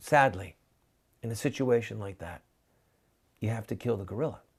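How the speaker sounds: sad, sorrowful, very low delivery. Demonstrating how the statement can be said: really sad tone. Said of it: "You can say it with a really sad tone of voice".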